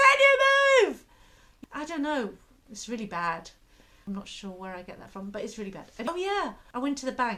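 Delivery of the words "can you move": shrill, full-on, very loud high shout. Describing shouting in the car at the driver in front, retelling own shouting. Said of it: "And I'm shouting".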